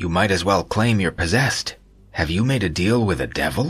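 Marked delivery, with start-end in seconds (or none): none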